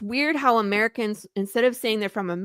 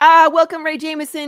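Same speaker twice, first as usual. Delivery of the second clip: put-on British-accented announcer voice, raised; 7 semitones higher, 10 dB louder than usual. Showing how americans announce guests, in a british announcer accent. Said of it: "People often announce in British".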